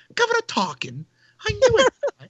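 put-on over-the-top British accent. Retelling how she redid her line after George asked for more British: exaggerated British accent. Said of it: "do a little more British".

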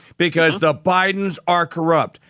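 ordinary talk, nothing marked

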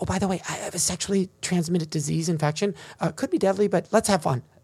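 put-on, acted whispering voice. Acting out a partner's line in an example for students: acting out a whisper. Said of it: "They suddenly whisper in your ear".

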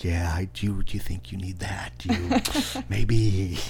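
put-on laid-back, patient voice. Describing how patient Jason is at Mount Crossings: laid-back Jason impression. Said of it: "I was trying to do my laid back voice".

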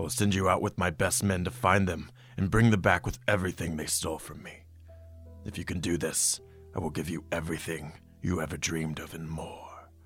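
growling under breath. Offering the Wookiee a deal to recover his stolen ship, growling under his breath. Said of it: "and he's growling under his breath".

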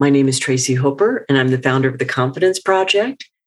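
question-like upspeak intonation on statements. Coaching on upspeak, showing the wrong way to introduce yourself, with upspeak. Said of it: "instead of saying".

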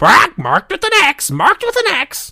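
shrill, very high squawking parrot voice. Testing out a mic, doing the pirate's parrot after the pirate, in a parrot voice. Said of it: "your parrot would follow and go".

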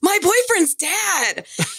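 sudden, blurted-out, high-pitched scream. Retelling a co-host's unexpected answer on a show: retelling a sudden scream. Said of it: "the co-host lady just screams out of nowhere".

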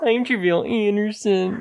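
very high, squeaky puppet-style voice. Imitating the man they are discussing, in a Muppet-like voice. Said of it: "It does sound like a Muppet".

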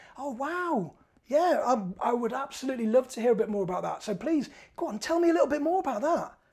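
bright, friendly, playful, positive tone. Demonstrating the friendly voice used most in negotiations; positive playful voice. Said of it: "your positive playful voice".

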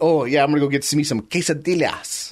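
mock Mexican-accented pronunciation. Retelling someone's attempt at a Mexican pronunciation: mock Mexican pronunciation. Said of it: "someone trying to do a Mexican pronunciation".

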